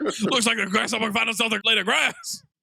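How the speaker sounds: put-on coarse Southern US accent. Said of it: "coarsest accent".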